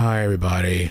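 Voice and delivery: dull, boring, flat monotone with no energy. Told to calm down, the speaker shows a toned-down greeting: boring monotone. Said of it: "I'll be boring, monotone".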